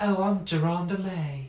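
put-on high-pitched old Southern lady voice and accent. Riffing on how a name sounds: old Southern plantation lady voice. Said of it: "sounds like an old southern like plantation lady".

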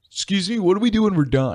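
mock eager, high, bragging know-it-all show-off voice. Retelling finishing the worksheet first in class: imitating own past bragging. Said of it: "bragging in front of everybody".

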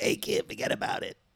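rough, creaky, dismissive, natural way of talking. Acting out a phone call with him, imitating how he sounded. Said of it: "That's how he sounded for real?".

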